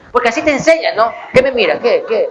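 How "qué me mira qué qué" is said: usual speaking voice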